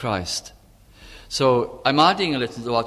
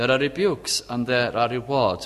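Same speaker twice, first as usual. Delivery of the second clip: ordinary talk, nothing marked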